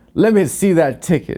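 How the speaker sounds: mean, rude voice. Retelling a rude conductor in a museum train car: imitating a mean train conductor. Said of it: "being mean to the".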